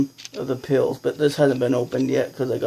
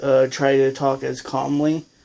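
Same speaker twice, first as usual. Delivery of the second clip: ordinary talk, nothing marked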